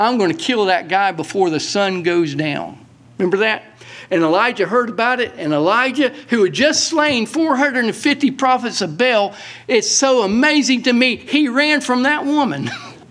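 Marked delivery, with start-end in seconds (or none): none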